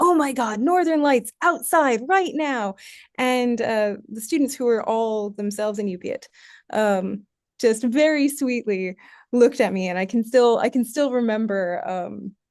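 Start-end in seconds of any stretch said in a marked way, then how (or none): 0.0-2.8 thrilled, bursting, high, excited exclamation. Retelling bursting in on students in a common room; retelling an excited exclamation. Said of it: "And I was just so excited".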